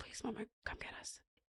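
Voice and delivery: breathy, frightened whisper. Mother retelling her daughter's plea on a phone call, retelling a frightened plea. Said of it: "I heard the fear in her voice".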